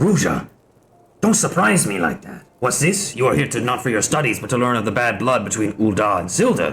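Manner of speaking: put-on cartoon character voice. Reading a game character's lines aloud, in Strong Bad voice. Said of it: "I have to do the fucking strong bad voice again".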